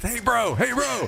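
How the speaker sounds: acted excited talk through grin. Retelling someone approaching another person: imitating excited talk through a grin. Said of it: "starting to grin through his teeth".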